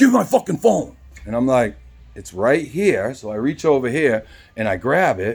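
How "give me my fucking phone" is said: put-on aggressive, heated, rough, pitched-up angry voice. Retelling a man coming back for his phone, imitating an angry man. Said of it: "he comes back and he's heated".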